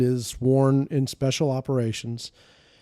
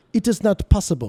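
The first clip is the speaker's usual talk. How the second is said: put-on French accent, pitched up; 6 semitones higher, 4 dB louder than usual. Retelling what they said when you asked to take everything off, French accent impression. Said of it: "I'll use my best French impression".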